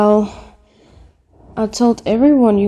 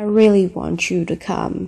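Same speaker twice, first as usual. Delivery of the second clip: usual speaking voice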